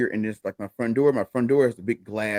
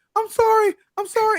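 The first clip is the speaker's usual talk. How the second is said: play-acted, very high-pitched, shrill, terrified blurt; 5 dB louder than usual. Retelling a frightened neighbor's reply: imitating a terrified neighbor. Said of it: "she's terrified".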